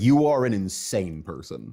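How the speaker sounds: ordinary talk, nothing marked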